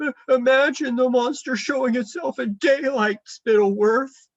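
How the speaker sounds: very high stammering whimper. Reading aloud, a quivering king speaks about the monster: whimpering. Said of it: "he whimpered".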